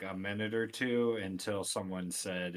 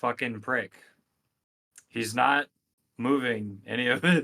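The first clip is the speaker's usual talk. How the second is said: put-on very loud, flat, robotic, accentless delivery; 4 semitones higher, 10 dB louder than usual. Voicing a character relaying an insult to a man: flat voice with no accent. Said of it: "just with no accent at all".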